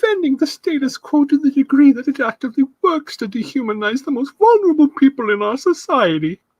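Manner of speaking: snooty, high, haughty early anime-dub voice. Reading out a woman's quoted statement, mock-haughty early anime-dub voice. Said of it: "sounds like early, like, anime voice dubs".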